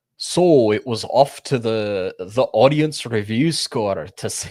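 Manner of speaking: put-on loud, slow, slurred drawl in a Scottish accent. Quoting a reviewer's video line: Critical Drinker impression. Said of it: "he's slurring and he's Scottish".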